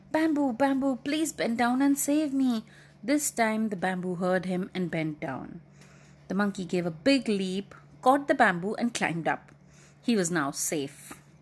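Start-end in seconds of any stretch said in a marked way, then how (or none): 0.1-2.6 whispered in a much higher voice. A monkey whispers to the bamboo while the leopard is busy, whispered. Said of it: "he again whispered to the bamboo".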